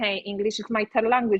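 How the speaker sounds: plain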